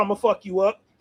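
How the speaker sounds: mock, taunting, trash-talking tone. Acting out someone at the door threatening: imitating someone talking trash. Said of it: "talking shit".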